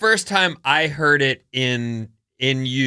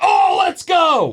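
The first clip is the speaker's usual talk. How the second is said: mock child's high, all-out hype battle scream; 8 semitones higher than usual. Acting out your oldest kid reacting to pancakes, do the kid's beast-mode scream. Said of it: "beast mode "Let's Go" voice".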